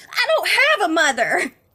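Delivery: high little kitten voice yelling. Voicing the kit being questioned in a role-play scene, kitten yelling back.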